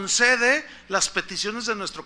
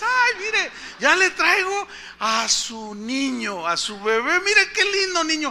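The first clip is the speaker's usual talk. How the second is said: put-on happy tone, higher; 7 semitones higher than usual. Retelling the nurse bringing in the baby: imitating a cheerful nurse. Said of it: "Bien contento".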